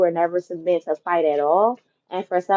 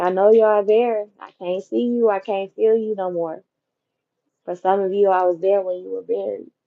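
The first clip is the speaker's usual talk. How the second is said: emotional, tearful, on the verge of crying. Voicing a plea to departed ancestors for help: emotional, close to crying. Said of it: "Not y'all gonna have me crying".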